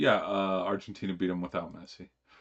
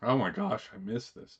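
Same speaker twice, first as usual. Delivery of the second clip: voice cracking, higher pitch; 3 semitones higher than usual. Starting to talk about the recent games, the speaker's voice cracks. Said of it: "You hear that voice crack right there?".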